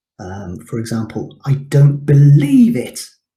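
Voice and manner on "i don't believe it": believe punched out with loud stress. Lecturer explaining volume and emphasis, example sentence with believe said louder. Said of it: "how the volume, that emphasizes the word believe".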